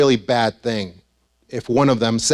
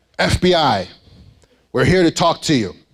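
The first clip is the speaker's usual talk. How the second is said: puffed-up, proud tone; 4 semitones higher than usual. Retelling how the supervisor announced the FBI at the door: imitating someone speaking proudly. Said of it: "very proudly goes".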